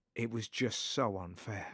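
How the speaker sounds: very grave, somber, mournful, solemn voice. A speaker retells what a comedian's son said to him, in a mock-somber voice. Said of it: "in a very somber voice".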